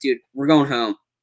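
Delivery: ordinary delivery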